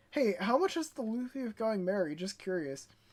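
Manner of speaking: ordinary talk, nothing marked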